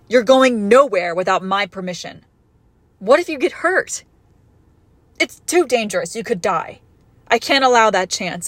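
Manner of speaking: shouting at full volume, loud and forbidding. Refusing to let the other person leave without permission, yelling. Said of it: "I didn't mean to yell".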